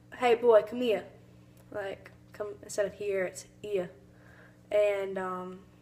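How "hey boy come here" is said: put-on classic old Hollywood film Southern accent. Explaining a pronunciation heard in old Southern movies, in an old Southern movie accent. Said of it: "old Southern movies".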